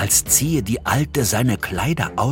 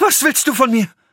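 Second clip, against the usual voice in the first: shrill, very high, loud cry of horror; 6 dB louder than usual. A mother recoiling from her son, who touched her arm, crying out in horror. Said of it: "fuhr aber mit einem Schrei des Entsetzens zurück".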